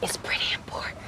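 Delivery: whispering.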